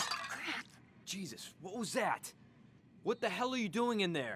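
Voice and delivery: irritated and angry. Reacting as the dad after a glass breaks: angry and annoyed. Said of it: "his dad gets pretty angry and annoyed".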